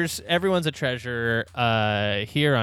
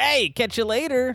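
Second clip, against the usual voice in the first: very high, zippy, hyper-animated voice; 10 semitones higher than usual. Telling the listener how Nick acts once recording stops: imitating Nick, Sonic-like. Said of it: "he's like Sonic".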